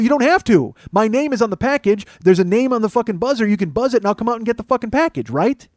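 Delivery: mock heated, very high, loud angry rant. Retelling a phone argument with a delivery agent: imitating own angry outburst. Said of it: "I said it just like that 'cause I'm a very calm person".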